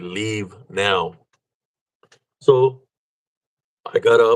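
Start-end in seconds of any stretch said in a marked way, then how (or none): 0.0-1.1 put-on old woman's whisper, quieter. Retelling what a voice whispered in the ear: imitating an old woman's whisper. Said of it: "It whispered in my ear".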